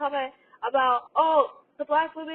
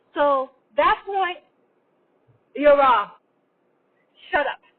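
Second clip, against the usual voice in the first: yelling loudly; 5 dB louder than usual. Correcting someone who got a show's seasons wrong, yelling. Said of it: "I know I'm yelling at you".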